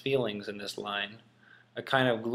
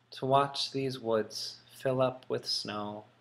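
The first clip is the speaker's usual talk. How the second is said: unhurried, reflective, tranquil, slow and calm tone; 3 dB quieter than usual. Reading a poem line aloud to show its mood: peaceful, thoughtful reading. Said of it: "And then peaceful".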